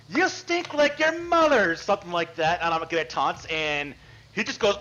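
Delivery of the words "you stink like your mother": high-pitched, loud mocking yell. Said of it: "So she just yells".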